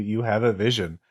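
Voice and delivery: ordinary delivery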